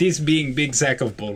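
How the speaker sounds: clumsy, bad put-on Russian accent. Joking about going to the Netherworld to find an accent, bad Russian accent. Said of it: "Bad Russian accent".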